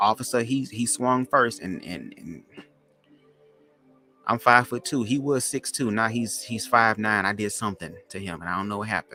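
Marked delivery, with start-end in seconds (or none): none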